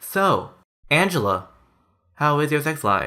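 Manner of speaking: very slow, plodding, sleepy, drawn-out hypnosis-tape delivery. Imitating hosts whose talk is so slow: spoken very slowly. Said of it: "the talk's so slow... It goes like".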